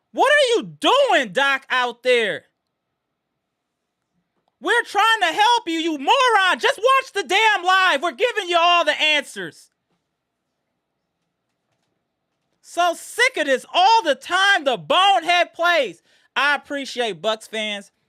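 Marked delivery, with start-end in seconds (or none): 0.1-16.0 furious, angry rant with yelling and screaming. Yelling at a player over his poor defensive plays, angry yelling. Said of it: "I apologize for the yelling and screaming".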